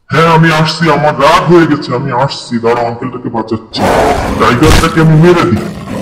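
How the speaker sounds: very low, deep gorilla voice.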